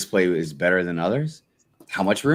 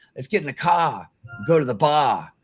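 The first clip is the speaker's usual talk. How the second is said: put-on New England Massachusetts accent; 7 semitones higher than usual. Showing how different dialects are across the country, in a Massachusetts accent. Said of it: "you go up into like Massachusetts and they're like".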